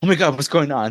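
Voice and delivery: over-the-top, alarmed, freaked-out panicky outburst. Recounting a shirtless guy's over-the-top reaction in a vampire scene: imitating a freaked-out man. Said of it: "He's like all freaked out".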